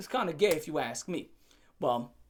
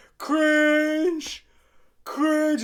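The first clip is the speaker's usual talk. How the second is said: high-pitched, loud, sneering mocking jeer. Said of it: "pointing and laughing and be like".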